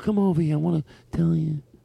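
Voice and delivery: rough, creaky mafia-guy voice. Imitating how mafia guys called someone over: imitating a mafia guy. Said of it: "That's how they did it. They go".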